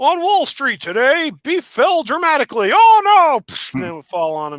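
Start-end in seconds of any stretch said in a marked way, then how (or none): 0.0-3.4 high-pitched, loud, slow delivery. Acting out a Muppet news reporter's broadcast: Muppet news reporter voice. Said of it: "the Muppet that was a news reporter".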